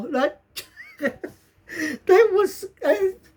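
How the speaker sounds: helpless laughing fit.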